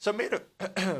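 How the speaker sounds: voice cracking partway. Commentating on a Pokémon match: voice cracking. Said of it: "Excuse that voice crack".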